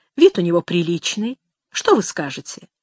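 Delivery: plain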